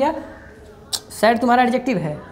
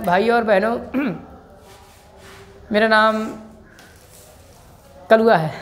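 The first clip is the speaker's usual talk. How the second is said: halting, stop-start speech in fits and starts. Explaining a word's meaning, the speaker demonstrates a man talking in halting, stop-start speech. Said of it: "रुक रुक के बोला ना".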